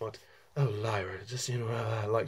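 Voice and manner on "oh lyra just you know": put-on breathy raspy voice, quieter. Imitating the actress addressing Lyra: breathy raspy Nicole Kidman voice. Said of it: "she has a very kind of breathy, raspy".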